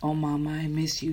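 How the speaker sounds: hushed whispering. Narrator reading Sarah's line as she remembers her mother, whispered. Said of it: "she whispered".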